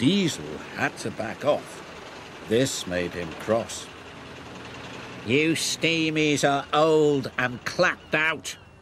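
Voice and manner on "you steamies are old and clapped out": scornful sneer, higher pitch. Reading a children's story aloud, one engine taunts another, sneering. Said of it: "he sneered".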